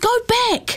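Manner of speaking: shrill yell, pitched high. Narrator reads a girl in the car calling to her mother, yelled. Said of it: "she yelled".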